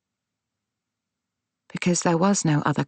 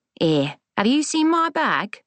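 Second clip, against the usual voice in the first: put-on high-pitched Cockney old grandmother voice. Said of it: "in the Cockney accent she'd never lost".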